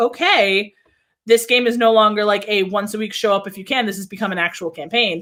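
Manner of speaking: normal talking voice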